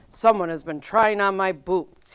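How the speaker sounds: loud, big, booming papa bear voice. A father bear finds his boots moved, booming in a big bear voice. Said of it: "he boomed in his big bear voice".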